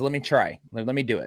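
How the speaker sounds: usual speaking voice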